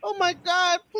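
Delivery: mock crying, high, tearful pleading voice. Retelling how the mother pleaded, imitating a crying mother. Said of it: "the mother was, like, crying".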